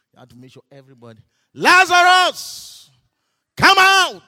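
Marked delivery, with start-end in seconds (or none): 1.6-4.1 very loud, very high, booming call. Acting out the call to Lazarus so everybody hears, a loud call. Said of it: "With a loud voice, not small".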